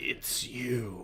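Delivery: rasping, whispered voice. Voicing a figure that tilts its head at the players, in a raspy voice. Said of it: "you hear a sort of like raspy voice just say".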